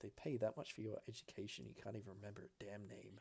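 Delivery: muttered under breath. Speaker retells what a woman mutters after elbowing someone, muttering under breath. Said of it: "she just mutters under her breath".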